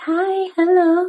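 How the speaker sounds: high, put-on fairy-princess voice. Showing how people change their voice when someone comes in, princess voice. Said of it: "sound like a princess and sound like a fairy".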